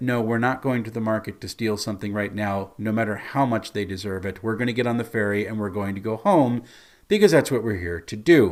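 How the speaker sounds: ordinary talk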